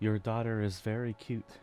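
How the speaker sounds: speaking very softly. A player character walks over to another character to speak, in a very soft voice. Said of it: "say in a very soft voice".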